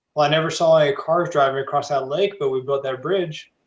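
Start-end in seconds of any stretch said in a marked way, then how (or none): none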